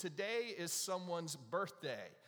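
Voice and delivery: ordinary talk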